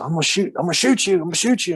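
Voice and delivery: mock screaming, high-pitched and rapidly rattled off. Retelling how a man with a gun started screaming at him, retelling someone screaming. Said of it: "He he starts screaming".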